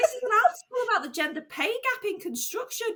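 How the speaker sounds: high, outraged, indignant tone.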